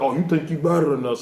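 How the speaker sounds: put-on taunting, mocking laughter. Speaker retells how the guys he hung out with laughed at him, imitating a laughing taunt. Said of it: "took turns laughing at me like".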